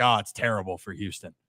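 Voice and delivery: put-on male voice, flat and dismissive. Mimicking how Kevin reacted to the trade: Kevin impression. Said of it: "Is that a good Kevin impression?".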